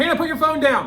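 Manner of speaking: high-pitched, loud yelling.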